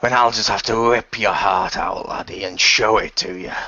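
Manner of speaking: taunting storybook pirate voice. Narrating a fight, the storyteller voices the captain: Captain Hook pirate voice. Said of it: "they can see a man dressed in red with a hook for a hand. / they can see a man dressed in red with a hook for a hand. / he says as he fires his cannons and trying to shoot the targets as they fly thro".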